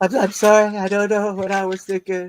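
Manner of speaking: slow, tearful, blubbering crying voice. Joking about making an apology video, mock crying apology. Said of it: "making a crying apology video and being all like".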